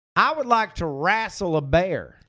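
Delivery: put-on slow, laid-back American Southern accent. Performing an approved line after a first try, southern us accent. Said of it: "should I do a southern accent for both?".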